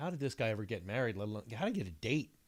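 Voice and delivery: ordinary delivery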